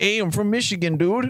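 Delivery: put-on Chicago accent. Trading midwest accent bits with a co-host, in a put-on chicago accent. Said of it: "we can do uh, Chicago accents".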